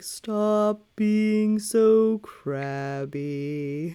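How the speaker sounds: sweet, cute little turtle puppet voice. Showing off a new turtle puppet and voicing what it would say, turtle puppet voice. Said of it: "imagining this turtle being like".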